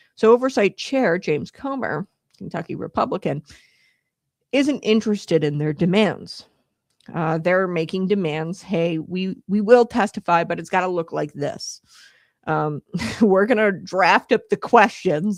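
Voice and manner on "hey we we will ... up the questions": ordinary talk, nothing marked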